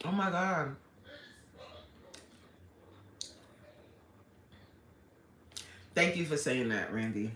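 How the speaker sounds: emotional, moved. Thanking someone for a comment that moved them, emotional. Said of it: "I get so emotional".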